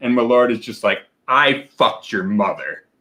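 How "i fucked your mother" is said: mock-aggressive voice, slower. Friends comparing liquors, voicing the drink as a mock-aggressive Malort voice. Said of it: "Malort's is an aggressive".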